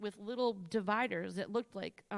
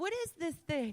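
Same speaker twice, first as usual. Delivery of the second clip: mock high-pitched, loud called-out shout; 7 semitones higher than usual. Retelling a shout to a friend across a store: imitating own past yell. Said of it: "I'm yelling at Liz".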